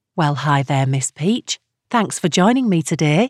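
usual speaking voice

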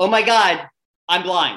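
yell stretched out into a slow cry. Speaker retells what they yelled in the middle of a test, retelling a yell. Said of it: "I literally started yelling".

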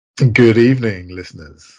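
deep smooth seductive voice.

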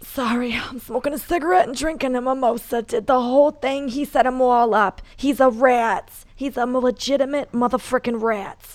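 raspy, rasping put-on voice. In the studio, asked to say it in her voice: Big Ang voice. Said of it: "Say it in Big Ange's voice for me".

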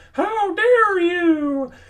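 shrill, very high-pitched screaming. Retelling a pastor yelling at the men in his congregation: imitating Mark Driscoll screaming. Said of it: "Mark Driscoll screaming".

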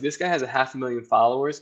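normal talking voice

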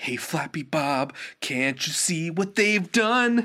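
mock-sincere dramatic tone. Describing trashy songs, the speaker imitates one's opening in a mock-dramatic sincere tone. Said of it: "in a really dramatic, sincere tone of voice and going".

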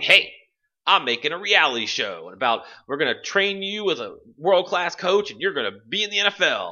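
high-pitched, smarmy delivery. Describing a game, the speaker voices the smarmy producer guy who comes up. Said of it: "this like smarmy producer guy comes up".

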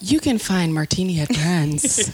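put-on Hollywood showbiz promo announcer voice. Telling listeners where to find the podcast, in a Hollywood voice. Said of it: "This is my Hollywood voice".

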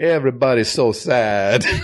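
put-on Italian accent. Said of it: "said in an Italian accent".

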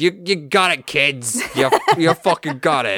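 very loud, big, high-pitched holler. Imagining a ghost chomping a cigar, looking down at the kids: Jack Kirby impression. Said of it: "chomping on a, like, ghost cigar and is looking down and he's like".

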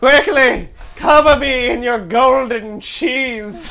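high, lavish, decadent, self-indulgent luxuriating voice. Asked for a hedonistic rich accent, channeling a character: mock-decadent Hedonism Bot voice. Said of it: "Let me channel my hedonism bot".

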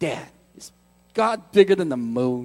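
put-on low-pitched Brooklyn accent. A father imitates his son asking him a question, kid's Brooklyn accent. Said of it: "he says it with his like Brooklyn accent".

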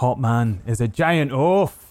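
shouting. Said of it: "he shouts that kinda towards the guy".

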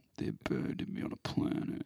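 whispery, gravelly and monotone. Trading Vin Diesel impressions, slow and monotone. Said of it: "he talks slow and he talks monotone".

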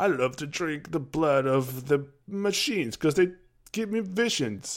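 high, unhinged, out-of-his-mind crazy-man voice. Retelling a game character's lines: imitating a crazy guy. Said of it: "he just talks like, like a crazy guy".

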